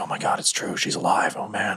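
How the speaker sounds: awed whispering, soft, slow and hushed. Voicing a crew that creeps in closer: whispering. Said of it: "kinda whispering".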